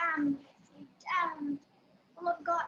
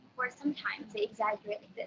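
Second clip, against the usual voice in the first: plain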